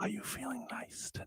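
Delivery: smooth, soft, breathy ASMR whisper. A co-host does a five-second bit for Jess in a smooth ASMR voice. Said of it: "It's A S M R".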